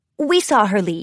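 plain

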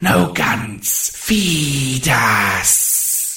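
high, scraping, raspy monster creature voice. Narrator voicing a bubbling creature lurching forward, in a raspy creature voice. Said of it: "The thing rasped".

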